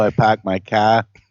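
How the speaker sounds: put-on Boston accent. Joking after another speaker mentions their accent: put-on Boston accent. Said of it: "Georgia stretches all the way up to Boston".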